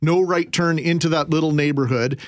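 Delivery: ordinary talk, nothing marked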